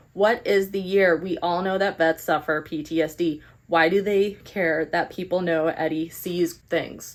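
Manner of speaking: plain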